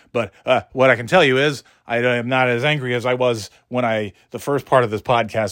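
wired, caffeinated, nonstop running chatter. On a podcast, after caffeine, talking a mile a minute. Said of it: "my words are just going like this a mile a minute".

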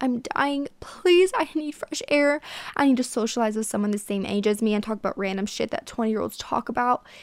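begging, pleading voice. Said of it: "I literally would have to beg her".

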